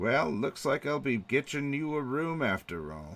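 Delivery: voice of an aged innkeeper. Narrating a dying character's last moments, then voicing an old innkeeper: old innkeeper voice. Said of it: "you do hear a voice of an old innkeeper".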